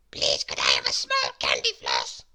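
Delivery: tiny little voice, hardly heard. Narrator reads Mister Small politely asking for something, in his very small voice. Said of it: "asked Mister Small in his very small voice".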